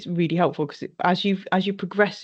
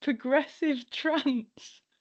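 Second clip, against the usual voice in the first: stifled laugh, pitched-up; 8 semitones higher, 5 dB quieter than usual. Repeating the other speaker's answer back, trying not to laugh. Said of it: "I'm trying not to laugh".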